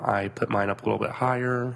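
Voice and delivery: plain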